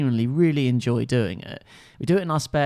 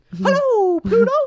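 pitched way up and loud; 7 dB louder than usual. Answering a remark on the previous impression with a Mickey Mouse voice. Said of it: "You sound like Mickey Mouse".

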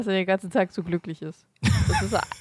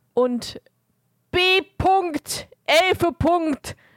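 very high, shrill, all-out yelling; 9 semitones higher, 4 dB louder than usual. Reading out something they wrote in caps lock, and gets asked why they're shouting. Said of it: "Warum schreist du das denn so".

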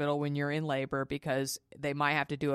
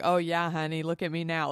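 put-on laughing while talking; 2 semitones higher than usual. Retelling own words while the nurses laughed: imitating own laughing talk. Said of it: "And I was laughing".

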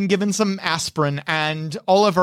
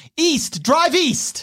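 put-on high-pitched kid's shout; 9 semitones higher than usual. A narrator voices a child who gets into the car and leans forward, yelling. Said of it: "leans forward and yells".

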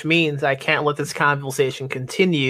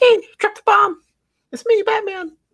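very high, loud, squeaky just-hit-puberty voice; 5 dB louder than usual. Imagining a man in a big cape walking up, squeaky puberty Batman voice. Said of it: "Batman should have like a like a squeaky voice, like a like he just went through puberty voice".

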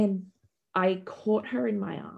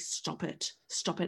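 acted angry tone, quieter; 3 semitones lower, 9 dB quieter than usual. Retelling how a man dabbed and stitched her wound: retelling her angry demand. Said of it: "I'm so angry".

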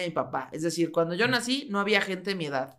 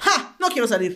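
loud, feigned, indignant, offended tone; 3 semitones higher, 5 dB louder than usual. Retelling refusing the neighborhood kids' invitation: imitating own past indignation. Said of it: "me hice la indignada".

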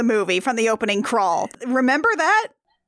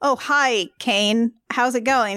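ordinary talk, nothing marked

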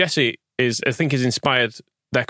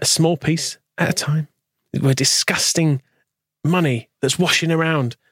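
very earnest, dead-serious, slow and pitched up; 4 semitones higher than usual. Doing someone's voice when asked by another speaker: earnest Rory voice. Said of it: "It's very earnest".

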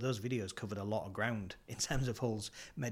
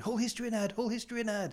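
put-on old man calling out, higher and louder; 12 semitones higher, 5 dB louder than usual. Retelling a moment when an elderly stranger called out from behind: imitating an elderly man calling out. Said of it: "I just heard this chap behind me going".

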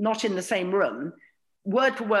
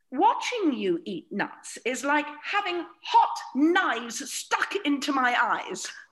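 very posh upper-class voice, slow drawl; 6 semitones higher than usual. Quoting what the speaker's mother used to say, very posh voice. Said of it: "very posh".

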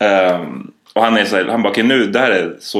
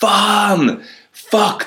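mock very high, alarmed shriek of panic; 12 semitones higher than usual. Telling a parachute jump story, the speaker imitates the instructor's panicked scream. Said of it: "hör han bara hur instruktören skriker så här".

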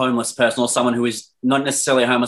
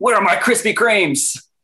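angry, very high-pitched voice; 10 semitones higher than usual. Laughing with a friend, imagining a homeless person asking for food: mock-angry demand. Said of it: "very angrily just like".

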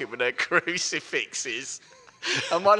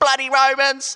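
high-pitched, loud shout; 11 semitones higher, 7 dB louder than usual. Retelling a film scene where someone in the market crowd calls out: retelling a crowd shout. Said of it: "someone in the crowd just shouts".

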